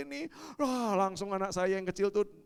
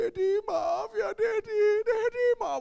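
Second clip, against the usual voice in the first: put-on very high, tearful, crying little child voice; 13 semitones higher, 7 dB louder than usual. Retelling a child's apology: imitating a child bursting into tears. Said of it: "tangisnya pecah Bapak Ibu".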